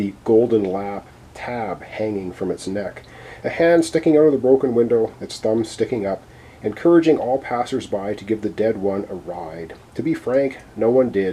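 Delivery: ordinary delivery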